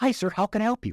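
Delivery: chirped way up high, super excited and bubbly. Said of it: "Scott's super excited. He's super bubbly".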